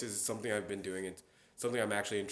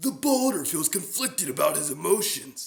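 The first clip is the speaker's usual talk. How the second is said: very loud, big opened-up booming voice; 8 semitones higher, 10 dB louder than usual. Speaker demonstrating how they voice bigger characters: opened-up Boulder voice. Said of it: "for that I open up my voice".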